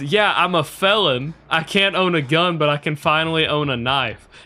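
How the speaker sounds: thrilled, proud, excited, eager delivery. Retelling what a man said while showing off a knife: imitating an excited man. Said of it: "he's just excited that he was finally able to own a knife".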